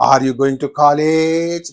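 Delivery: rising intonation on college. Asking a question as an intonation example, rising intonation on college. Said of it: "So this is, you know, a rising intonation".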